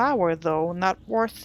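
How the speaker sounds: plain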